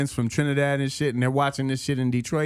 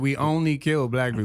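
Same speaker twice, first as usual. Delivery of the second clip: normal talking voice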